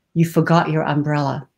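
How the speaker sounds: usual speaking voice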